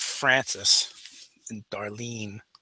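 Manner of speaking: soft, hushed, barely voiced whisper. Voicing a character who names the dead crewmen: whispering. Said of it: "in a whisper, she says".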